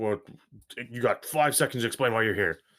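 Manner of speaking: menacing, threatening voice. Voicing guards reaching for their weapons: threatening Red Brand guard. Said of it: "They're like".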